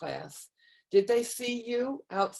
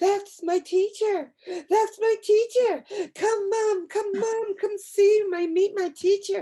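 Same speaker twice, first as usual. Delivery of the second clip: put-on excited child yell, higher and louder; 12 semitones higher, 7 dB louder than usual. Retelling a student spotting their teacher in a grocery store: imitating a child yelling excitedly. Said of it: "she just started yelling across the grocery store".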